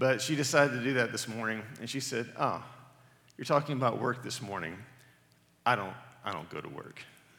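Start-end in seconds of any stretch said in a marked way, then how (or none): 2.4-7.0 mock smug tone in a put-on child voice. Parent retelling what his daughter said about his sermon notes, mimicking her smug tone. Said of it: "kind of smugly".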